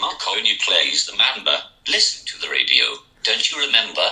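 very low, deep and soft voice. Demonstrating a robot voice translator, the first one comes out in a Michael Caine-like voice. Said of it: "Why is it Michael Caine?".

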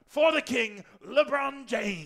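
high, 1920s circus ringmaster announcer voice. Imitating a basketball commentator, sounding like a 1920s circus director. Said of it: "sounds like more really like a weird 1920s like circus director".

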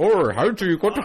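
put-on Dutch old man accent, high and loud. Retelling what a Dutch grandfather asked: put-on Dutch accent. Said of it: "how did he say it?".

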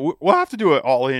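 voice cracking. Talking about an upcoming wrestling card, voice cracking. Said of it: "Ooh, my voice cracked up".

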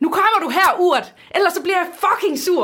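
very high, loud, pressured yell. Retelling a man shouting for a child on the playground: retelling a shout. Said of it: "Og så råber han så på legepladsen".

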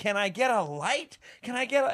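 mock unhinged, high-pitched, drawn-out screaming. Retelling a stage bit where the performer demands a light: imitating Paul screaming. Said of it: "he's out there screaming".

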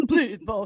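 put-on sad donkey voice, a little wobbly. Repeating the voice of Charles pleading with the boys, slightly wobbly, sad-donkey Charles voice. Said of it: "a little bit of like a wobbly, sad donkey".

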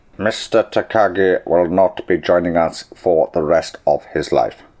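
very low, dropped put-on voice. After doing Arnold Schwarzenegger, the speaker moves on to an Alan Rickman impression. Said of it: "I could do Alan Rickman as well".

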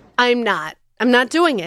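mock fiery, heated, dug-in, swooping pitch. Retelling refusing to dump out breast milk: retelling a heated refusal. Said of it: "I just got more and more heated".

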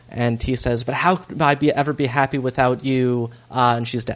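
usual speaking voice

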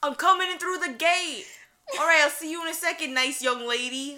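put-on old-school New York Italian accent. Retelling a call from the pizza place, imitating Frankie's New York Italian accent. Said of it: "that same old New York Italian accent".

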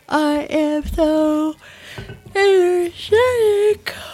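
loud, high, sarcastic words through a yawn. Wrapping up a podcast conversation with co-hosts: said while yawning. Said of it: "As I'm yawning".

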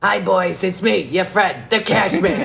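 put-on raspy, dated, old-timey, odd voice. Greet the boys as you are welcomed back to the shed, in a raspy, dated Cash Man voice. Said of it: "It's such an obscene voice".

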